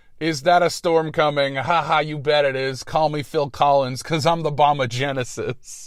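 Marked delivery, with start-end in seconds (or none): none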